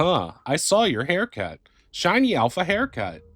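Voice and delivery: put-on high, swooping chat assistant AI voice. Recalling a chat comment to another streamer, in Beluxy AI voice. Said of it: "That's my Beluxy A I voice I always do".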